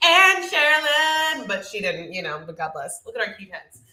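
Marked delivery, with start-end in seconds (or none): 0.0-1.5 dramatic, high, slow, drawn-out delivery. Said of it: "wanted Juan to just go like this".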